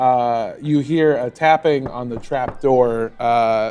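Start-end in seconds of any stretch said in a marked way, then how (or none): none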